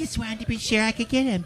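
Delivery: slightly cartoonish mother character voice. Retelling what was said, the speaker quotes a mom, imitating his mom. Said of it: "Sounds like his mom".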